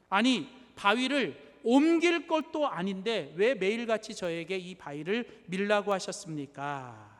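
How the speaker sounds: ordinary delivery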